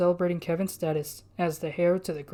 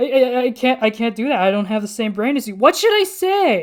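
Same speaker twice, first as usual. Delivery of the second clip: very loud, high, gasping, hyperventilating panic; 5 semitones higher, 10 dB louder than usual. Kevin asks his sister Orion what he should say, hyperventilating. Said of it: "King [name] put a paw on the Castform's back. / he pulled his sister back down the steps. / The heir to [name] is [name]".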